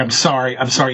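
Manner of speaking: put-on tearful crying. Retelling a film scene where a man begs while crying: imitating someone crying. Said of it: "And he starts crying".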